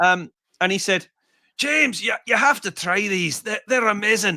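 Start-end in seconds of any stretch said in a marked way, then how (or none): 1.6-4.4 eager pitch, tripping over repeated words, put-on Scottish accent. Retelling what a guitar collector said about trying pedals: impression of Graham. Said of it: "I've done one half decent impression today".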